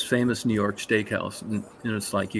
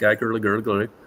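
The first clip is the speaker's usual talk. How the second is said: usual speaking voice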